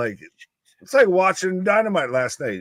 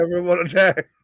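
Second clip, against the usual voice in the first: usual speaking voice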